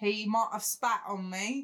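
horrible, badly done fake British accent. Teasing a friend's word choice, speaker repeats the line in a bad British accent. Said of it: "That was a horrible accent".

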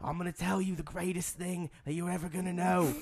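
put-on Australian accent, man's voice. Describing a video about Freemasonry, imitating an Australian man. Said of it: "he's Australian, and he talks like this".

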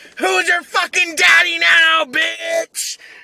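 mock, very high, shrill, loud taunting yell. Describing picking on kids at basketball, the speaker acts out taunting them; acting out yelling a taunt. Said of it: "start yelling like".

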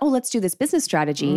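ordinary delivery

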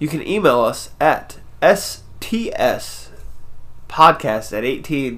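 slowed-down careful delivery. Giving the contact details again for listeners, slow and deliberate. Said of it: "I'm going to slow down a little bit".

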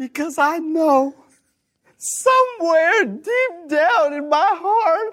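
impassioned, choked-up voice, fighting back sobs. Performing an impassioned plea for a listener, choking back tears. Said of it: "He's he's choking back the tears".

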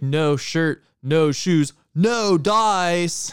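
very slow, loud stoner surfer voice, "dice" stretched and stressed. Retelling own quip on seeing a mask sign: Jeff Spicoli voice. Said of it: "that stoner, like, surfer guy character that I like doing the voice of is basically just Jeff Spicoli".

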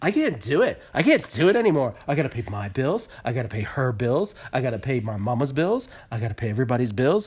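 sudden, total, acted-out meltdown, completely unglued. Retelling how Colty finally lost his temper: imitating someone losing it. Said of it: "he lost his shit".

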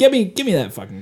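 ordinary delivery

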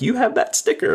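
very high-pitched, excited, thrilled shriek. Speaker retells a guy screaming on seeing the speaker's sticker: retelling a scream. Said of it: "He was like screaming".

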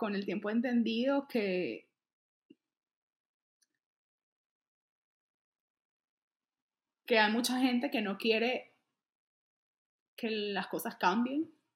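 voice catching, cracking and giving way. Answering a question about a campaign, voice breaking. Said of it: "se me quiebra".

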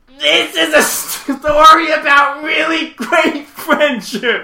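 very shrill, high, loud, strained nasal voiceover voice. Retelling a movie's opening voiceover: imitating a constipated, nasal voiceover. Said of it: "Like in this constipated".

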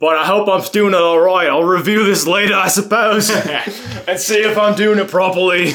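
very high, loud, put-on Australian accent. Speaker practicing an accent for a tape, in an Australian accent. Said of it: "your French or Australian accent right now".

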